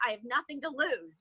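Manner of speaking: usual speaking voice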